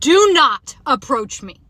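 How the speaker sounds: firm, slow, deliberate shout. Retelling a stranger approaching in a parking lot: retelling a yell. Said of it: "I literally yelled at him and I said".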